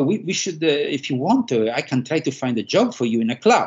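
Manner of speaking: put-on posh, prim, very proper British old woman accent. Quoting the speaker's grandma offering to find them a club job, very proper British accent. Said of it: "very British accent, my grandma was very proper".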